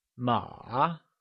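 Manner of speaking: "ma" with falling-rising third tone, dipping then rising. Showing a learner the Mandarin word for horse: falling-rising third tone on ma. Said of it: "with a falling rising tone".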